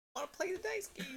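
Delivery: put-on tiny baby voice, very high and soft. Player character at a dice game table, in Howdy's cute baby voice. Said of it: "He says it in that voice".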